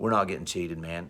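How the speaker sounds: put-on very quiet, flat, straight-faced deadpan. Retelling how the other man answered the complaint about being cheated, in a retold deadpan. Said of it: "Pete just looked at me deadpan, straight face".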